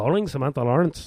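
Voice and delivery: put-on Irish accent. Explaining she changed Siri's accent, the speaker does Siri in an Irish accent. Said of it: "I'm working on my Irish accent".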